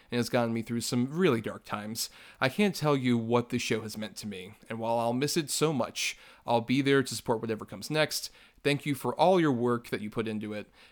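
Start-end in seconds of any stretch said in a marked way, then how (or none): none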